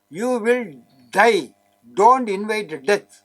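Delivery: very loud. Warning smokers and drinkers about the corona infection: very loud. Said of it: "I say it very loudly".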